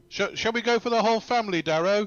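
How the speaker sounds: loud shout. Playing a character, calling out to Darrow: shouting out. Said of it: "But I will shout out".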